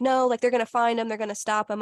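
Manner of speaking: normal talking voice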